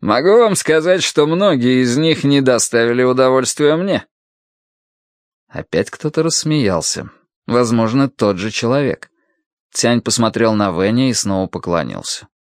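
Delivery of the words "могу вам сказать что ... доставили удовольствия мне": said with a smirk. The first minister replies to Sima Qian, with a smirk. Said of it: "произнес первый министр с ухмылкой".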